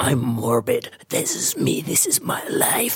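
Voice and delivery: deep, gravelly put-on voice. A player tries out a voice for their character: gravelly, deep Morbid voice. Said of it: "Okay, gravelly deep".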